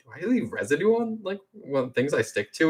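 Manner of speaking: high, self-conscious mutter under the breath. Retelling a comic scene after Iron Man scolds him, imitating Peter muttering. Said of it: "kind of under his breath to himself".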